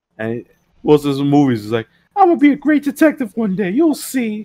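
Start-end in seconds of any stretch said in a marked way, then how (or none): 2.2-4.5 very high, whiny little voice. Mocking how an actor would play a cop role, mock-whiny voice. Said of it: "as a whiny little ass bitch".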